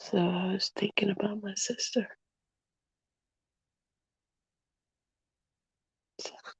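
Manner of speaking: hushed, quiet voice. Talking to viewers at night while others in the house sleep: talking quietly. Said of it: "I'm just trying to talk quiet".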